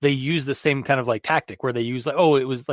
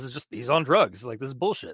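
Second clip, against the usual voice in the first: sarcastic, mocking put-on voice, quieter; 4 dB quieter than usual. Imitating people like the listeners dismissing the story: sarcastic imitation of skeptics. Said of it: "I'm being, like, very, like, sarcastic about that".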